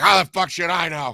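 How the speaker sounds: put-on grumpy old man voice. Retelling what a bar regular answered when greeted: imitating Rudy, grumpy old man. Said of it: "He was just this grumpy old man".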